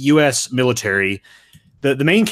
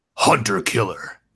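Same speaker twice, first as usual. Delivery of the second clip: retro nineties arcade game announcer voice; 3 semitones lower than usual. Saying a movie title as another speaker asked: nineties arcade game voice. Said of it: "You gotta say it like a".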